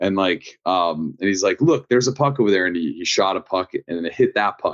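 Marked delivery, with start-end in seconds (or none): 1.6-2.7 put-on quick, high, rattled-off French Canadian accent. Retelling how JP aimed a puck shot, imitating JP's French Canadian accent. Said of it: "has like French Canadian accent".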